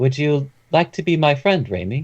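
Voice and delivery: put-on voice of a wise old sage. Describing a character who responds to him, speaker uses a sage-like voice. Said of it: "a more sage-like voice".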